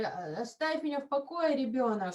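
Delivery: normal talking voice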